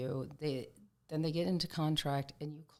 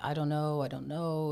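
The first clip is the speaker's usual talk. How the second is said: mimicked crying voice, slower; 4 dB louder than usual. Retelling a woman's answer when asked to hang in there, imitating someone crying. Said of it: "And she's crying".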